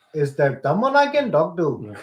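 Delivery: put-on Indian accent. Asked for an example, the speaker demonstrates: fake indian accent. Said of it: "give me an example".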